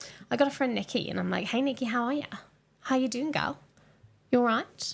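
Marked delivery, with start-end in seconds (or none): 1.5-4.9 put-on, slightly posh Australian accent. Retelling how the speaker greets a friend, imitating an Australian accent. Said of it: "sometimes I speak like I'm from Australia".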